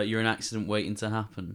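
ordinary talk

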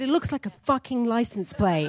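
put-on, high-pitched, furious screaming rant. Retelling how the agent reacted to the photo: imitating someone screaming. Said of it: "he just screamed at me".

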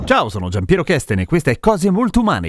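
affected announcer voice.

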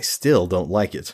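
ordinary delivery

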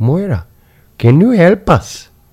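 perfect put-on Indian accent, very high-pitched. Retelling a brother asking an aunt for help, in an indian accent. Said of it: "he had a perfect Indian accent".

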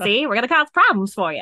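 loud mock Brooklyn accent. Doing a bit as a Prohibition bootlegger, in a Brooklyn accent. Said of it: "It should have been Brooklyn".

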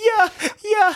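put-on cheer, high.

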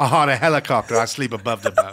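put-on British accent. Imitating a reality show chef with a put-on british accent. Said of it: "Is he even have an accent?".

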